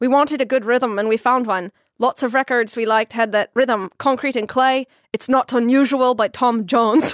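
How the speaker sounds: attempted put-on Irish brogue. Reading a quote aloud to the others, trying it in a put-on irish accent. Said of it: "should I try this in Irish accent?".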